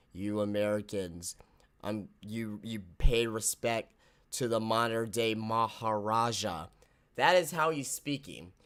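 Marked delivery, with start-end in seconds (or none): 0.2-6.7 very low, very slow, flat monotone drone. Mocking a low-energy mic segment: Jinder Mahal impression. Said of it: "He's very monotone like this".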